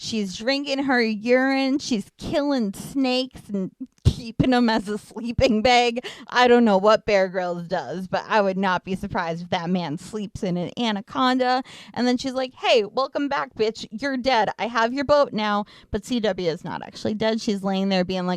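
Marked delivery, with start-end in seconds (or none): 12.5-15.6 taunting, triumphant, gloating tone. Retelling a movie plot, acting out Madison: acting out Madison. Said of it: "sort of step-by-step reenactments".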